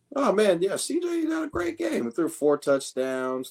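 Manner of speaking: very high, sing-song, swooping, unhurried voice. Answering a jab about praising a quarterback: voice going high. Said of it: "You hear how high his voice just got?".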